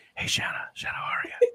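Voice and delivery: put-on creepy, low, hushed, breathy drunk whisper. Imitating own drunk voice greeting someone: quiet low drunk voice. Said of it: "That's so creepy".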